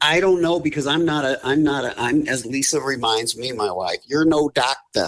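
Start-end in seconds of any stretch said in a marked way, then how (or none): 4.1-5.1 imitated Boston accent with much higher pitch. Quoting what his wife Lisa reminds him, in Lisa's Boston accent. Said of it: "in her Boston accent".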